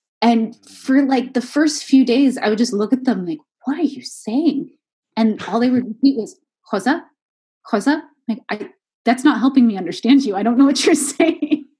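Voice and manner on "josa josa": put-on Tuscan accent. Retelling how locals kept repeating a word to them, in a thick Tuscan accent. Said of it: "they had this thick Tuscan accent".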